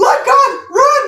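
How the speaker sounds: put-on high, loud, slow, panicked shout in Jamaican accent. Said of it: "Let God is, like, a Jamaican, you know, exclamation".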